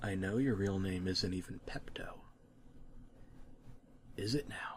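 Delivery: creepy, soft, low whisper.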